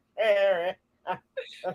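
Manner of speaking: put-on slurred English accent. Speaker imitates how a man with an English accent talked: slurred English-accent impression. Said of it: "his words was all slurred. He'd be like".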